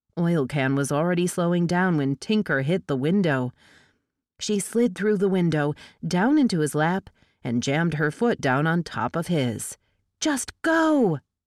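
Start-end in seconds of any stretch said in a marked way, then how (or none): 10.1-11.1 shrill, very high-pitched shout. Reading a story aloud, a driver urged on in a chase: shouting. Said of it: "she shouted".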